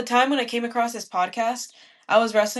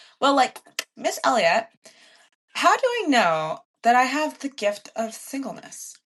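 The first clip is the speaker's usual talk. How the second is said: sing-song, swooping put-on young teenage girl voice; 3 semitones higher than usual. Retelling a young woman's question, in a put-on teenage voice. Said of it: "she did her teenage voice".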